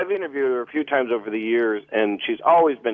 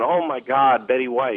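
normal talking voice

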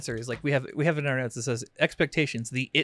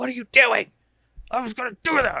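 put-on shrill, loud, high, frightened shouting; 9 semitones higher, 5 dB louder than usual. Recounting getting hurt carrying laundry, the speaker imitates how she yelled at him. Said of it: "she yells at me".

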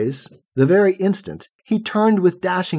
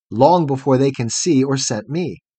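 plain reading voice

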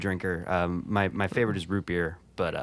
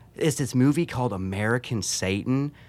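put-on southern accent, Missouri style; 4 semitones higher than usual. Retelling what a hairdresser said, imitating a southern Missouri accent. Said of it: "she had kinda like a southern accent".

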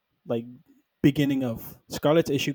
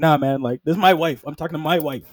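usual speaking voice

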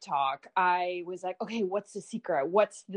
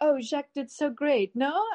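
put-on slight French accent, pitched up; 7 semitones higher, 3 dB louder than usual. Retell what Bella says walking out of the designer's runway show, in Bella's little French accent. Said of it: "she's doing this little French accent".

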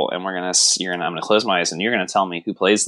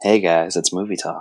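soft, hushed whisper. Told they got too loud, the speaker greets the audience in a soft whisper. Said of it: "cool it down with a soft whisper".

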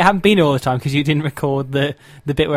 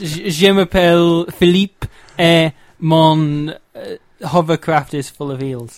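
extremely bad put-on fake French accent. Podcast host jokingly introducing himself as philippe, in a terrible fake french accent. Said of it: "home of the world's worst French accent".

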